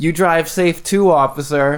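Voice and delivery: put-on sneering, condescending politeness. Retelling a reply to a police officer: mock-snide, condescending. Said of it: "the tone was just, like, this snide, like... condescending, condescending".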